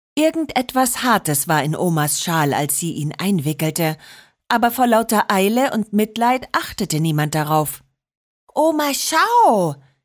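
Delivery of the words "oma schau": called-out, exclaiming voice. A child calls to her grandmother about a found puppy, calling out. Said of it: "rief Marinette".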